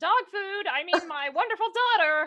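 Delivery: shouting. Playing a parent in a scene, the speaker calls for the daughter, yelling. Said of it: "I'm yelling".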